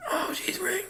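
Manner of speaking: high, soft mock whisper. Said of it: "sound like he's whispering every line".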